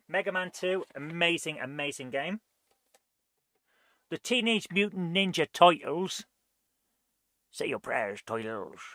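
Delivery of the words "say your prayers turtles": put-on Scottish accent, dropped low and deep. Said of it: "Sean Connery did".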